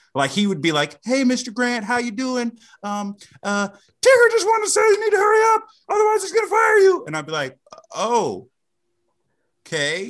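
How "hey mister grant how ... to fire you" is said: very high, loud puppet-style voice. Retelling a man talking to someone through a Tigger puppet: Tigger puppet voice. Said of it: "the same kind of puppet voice for everybody".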